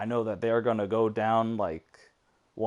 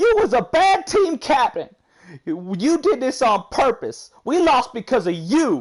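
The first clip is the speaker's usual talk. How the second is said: mock swooping, shrill, very loud, high angry yelling; 10 dB louder than usual. Act out a lady turning on her team captain, imitating someone mad. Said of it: "got mad at her team captain".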